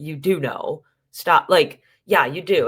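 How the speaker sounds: acted, slow, forceful, insistent, aggressive pressing voice. Imitating a cast member pushing someone to answer: imitating someone being aggressive. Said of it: "how aggressive he was".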